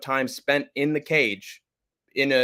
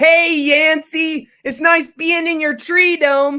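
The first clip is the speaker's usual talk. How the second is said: high-pitched, loud cartoonish voice; 8 dB louder than usual. Impression of SpongeBob asking for an autograph at a car wash: SpongeBob voice. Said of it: "Impression of SpongeBob".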